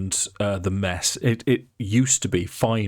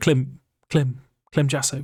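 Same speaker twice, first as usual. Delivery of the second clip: shy, timid character voice; 5 semitones higher than usual. Voicing a character as he introduces himself: timid Clem Jasso voice. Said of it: "he will say in its very timid voice".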